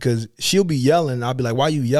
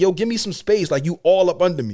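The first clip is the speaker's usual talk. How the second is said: raised voice, pitched up higher; 5 semitones higher than usual. Retelling telling someone crowding them to back up; retelling a raised voice. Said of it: "but I'm raising my voice".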